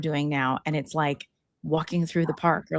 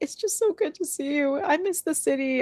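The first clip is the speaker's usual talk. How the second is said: crying through the words, tearful, pitched up; 11 semitones higher than usual. Retelling how a friend who walked in the door started crying: imitating a friend crying. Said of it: "She started crying".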